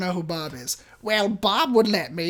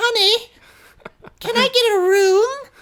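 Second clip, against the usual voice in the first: put-on very high, loud old-lady voice; 7 dB louder than usual. Telling a story, the speaker imitates the voice an older lady used with them. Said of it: "talking to me in this like voice".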